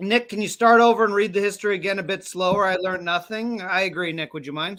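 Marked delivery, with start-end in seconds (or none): none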